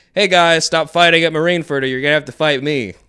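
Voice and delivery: mock casual, offhand, unbothered delivery. Describing Shanks breaking up the fighting at Marineford: imitating Shanks nonchalantly. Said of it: "he's doing something so nonchalantly".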